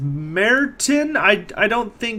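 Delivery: put-on high, slow, drawn-out puzzled girl voice.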